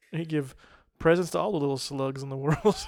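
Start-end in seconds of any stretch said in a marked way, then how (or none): none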